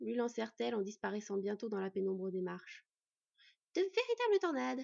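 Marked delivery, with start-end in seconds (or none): 3.7-4.9 good-natured, kindly, very high-pitched voice. Someone remarks on two women rushing down the stairs ahead, in a kindly tone. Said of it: "commenta Baylad avec un ton bienveillant".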